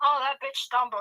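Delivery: ordinary delivery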